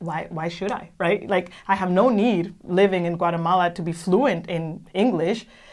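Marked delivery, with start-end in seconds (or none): none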